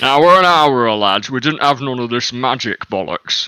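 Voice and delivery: badly done, loud, put-on northern English accent. Speaking as one of the dwarves the others met, in a bad northern accent. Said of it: "I'm just going to do bad northern accents".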